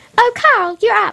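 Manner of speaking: very high, slow put-on voice. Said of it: "Okay, Mum".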